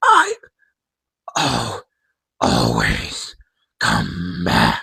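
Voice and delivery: weak, very low, broken rasp. Describing a better game ending, the speaker voices the villain's last words: weak raspy Afton voice. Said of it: "Kind of in more like a raspy, spring trappy voice".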